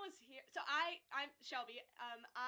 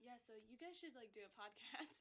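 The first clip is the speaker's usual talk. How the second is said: soft, hushed, zoned-out stoner murmur; 3 semitones lower, 13 dB quieter than usual. Retelling what the pianist said to them: imitating the pianist like a stoner. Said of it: "You make him sound like he's a stoner".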